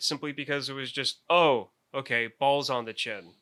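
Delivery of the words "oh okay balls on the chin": ordinary talk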